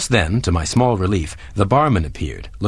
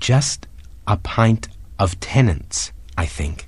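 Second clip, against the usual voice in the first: quiet, soft, slow, unhurried speech. Narrator in a pub, ordering a pint from the barman in a quiet voice. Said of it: "said in a quiet voice".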